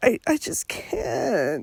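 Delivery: soft, whiny, tearful, sick-sounding crying voice. Describing a voice Lori used in Monday's proceedings: imitating Lori's whiny, crying voice. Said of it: "kind of whiny, crying, sick voice".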